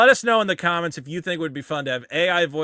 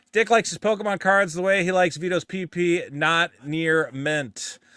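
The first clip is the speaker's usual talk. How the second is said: ordinary delivery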